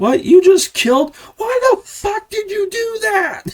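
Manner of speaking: high-pitched, raging, top-of-the-lungs furious scream. Retelling a friend throwing a fit in a video: imitating someone screaming furiously. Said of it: "he's just screaming at the top of his lungs".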